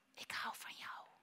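very soft, barely audible whisper. A mother retells her child whispering in her ear: very soft whisper. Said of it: "En hij fluisterde in mijn oor heel zachtjes".

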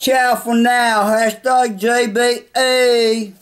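put-on English accent, slow, clumsy and amateur. Trying an English accent for a sign-off: attempted English accent. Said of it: "even though my accent ain't the best, mate, I'll give it a try".

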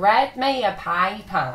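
attempted Australian accent. Speaker tries the sample phrase they were told to say; Australian accent attempt. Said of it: "do a good Australian accent".

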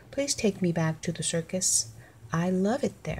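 ordinary delivery, nothing marked

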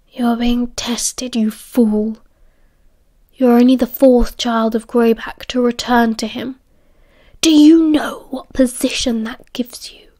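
hushed, low voice. Castor speaks to Remus through the cell bars, in a lowered voice. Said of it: "Castor lowered his voice".

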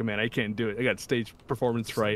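ordinary talk, nothing marked

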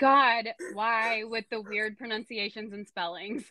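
ordinary talk, nothing marked

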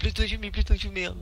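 put-on German voice. Retelling how a shot stranger begged not to be shot: imitating a german voice. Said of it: "he was making a German voice going".

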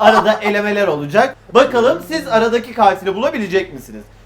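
loud, projected announcer voice.

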